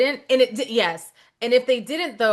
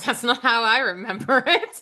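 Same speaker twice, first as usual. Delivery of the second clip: chuckling through the words, laughing and amused; 2 semitones higher than usual. Retelling Cinderella's reply in that scene: imitating Cinderella laughing. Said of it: "Cinderella just kinda laughs and goes".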